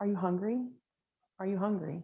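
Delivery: put-on judgmental, mock-unkind voice. Describing how she would talk to herself, voicing her mom: imitating her mom's voice. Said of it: "I hear my mom's voice".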